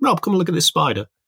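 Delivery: high, fast call. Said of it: "shouted me down and said".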